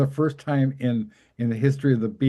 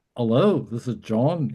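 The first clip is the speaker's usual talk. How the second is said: put-on man's lilting, up-lilting speech. Retelling talking to a man, imitating John's lilting up speech. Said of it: "that sort of up lilting up up up speech".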